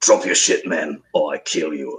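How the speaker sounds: low, dark, deep threatening growl. Narrating a scene to a player, the speaker voices an unseen threat: deep growling voice. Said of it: "a deep growling voice".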